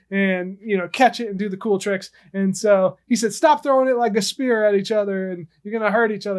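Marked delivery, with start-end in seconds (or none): none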